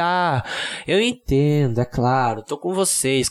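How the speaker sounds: very slow, low, drawn-out, feigned sympathy. Speaker acts out pretending to side with teachers, fake sympathy. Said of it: "Tenho que fingir que".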